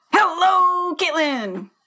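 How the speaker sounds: football-style cheer. Opening their podcast, a host greets the co-host in a football-style cheer. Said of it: "I'll do football style".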